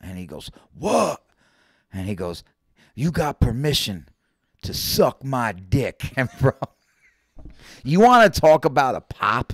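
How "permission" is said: strong stress punched on 'permission'. Retelling someone in a silent crowd heckling the CO, with stress on 'permission'. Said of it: "just the emphasis on permission".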